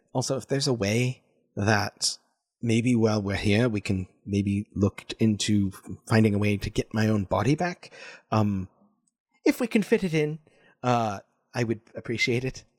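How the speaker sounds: confidential, secretive aside tone. Narrating what he says next to the group, in a hushed tone. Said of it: "in a hushed tone".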